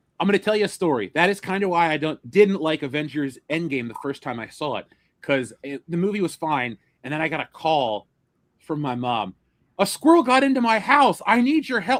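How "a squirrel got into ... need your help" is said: loud high-pitched yelling. Retelling mom's phone call at the end of a movie: imitating mom yelling. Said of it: "she's like yelling in my ear".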